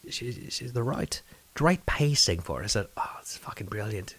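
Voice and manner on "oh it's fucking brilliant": put-on Irish accent, slightly English, much quieter. Retelling an accent attempt that got feedback, irish accent, bit english. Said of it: "that's a little English right there".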